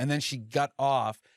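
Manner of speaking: ordinary delivery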